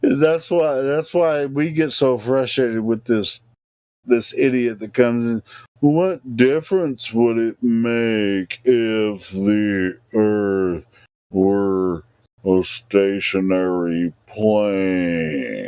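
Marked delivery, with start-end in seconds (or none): 5.8-15.7 very slow, low, drawn out for drama. Repeating the question of the person who frustrates them, deliberately slow for dramatic effect. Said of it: "I'm saying it slow on purpose".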